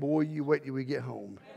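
put-on muttering under the breath. Retelling what his daddy said to him and Larry, imitating muttering under breath. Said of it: "you could hear him under his breath saying".

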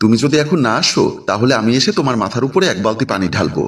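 ordinary delivery

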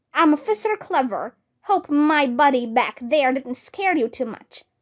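ordinary delivery

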